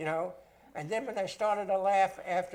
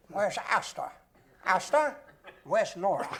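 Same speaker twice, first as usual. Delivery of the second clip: put-on clipped, old-fashioned film actor style voice. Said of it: "William Powell had a voice that was similar".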